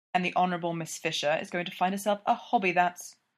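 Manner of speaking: ordinary talk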